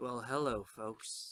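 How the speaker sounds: velvety dramatic voice. Taking over from the host, a presenter greets the audience in a velvety dramatic voice. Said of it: "We're laying the velvet in the voice".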